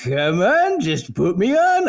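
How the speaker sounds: slow, high, seductive, beckoning coaxing voice. Voicing a chain that tempts the character to put it on: voice of the tempting chain. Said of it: "I don't know why it sounds like that".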